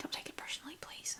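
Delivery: very quiet, very soft, breathy whisper. After admitting to yelling, whispering. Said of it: "See, I whispered".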